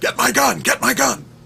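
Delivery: high, loud yell. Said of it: "suddenly started yelling to his girlfriend".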